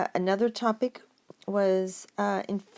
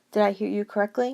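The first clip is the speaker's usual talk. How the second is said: usual speaking voice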